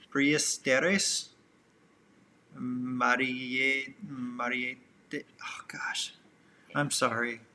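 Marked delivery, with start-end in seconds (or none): 0.1-1.3 Spanish-style pronunciation. Reading a viewer's name from a super chat, Spanish pronunciation. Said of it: "I'm going to pronounce it as if I'm speaking Spanish".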